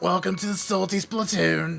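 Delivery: rough, raspy, creaky heavy-smoker-like voice. Voicing a character with a greeting, like the Monsters Inc lady. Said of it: "I sound like the fucking lady from Monsters Inc".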